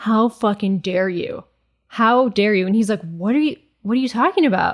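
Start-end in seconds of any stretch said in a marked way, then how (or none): 0.0-2.7 acted, mock-furious woman's voice. Retelling how a girlfriend confronted a man outside: imitating a furious girlfriend. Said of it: "she's like furious".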